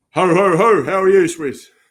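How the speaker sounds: very loud, high-pitched, booming voice. Podcast guest, welcomed on as Santa, greets the host, Santa voice. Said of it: "doing his uh, his best impression of Santa".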